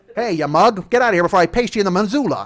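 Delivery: put-on 1920s gangster accent. Acting out how people talked in the twenties: put-on 1920s gangster accent. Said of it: "that's how we all talked in the twenties".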